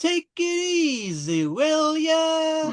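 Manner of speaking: weird, very high surfer-dude voice, drawn-out ya. Mocking the English dub actor's voice for a character, in a weird surfer voice. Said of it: "some kind of weird like surfer voice".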